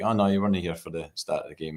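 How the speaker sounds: plain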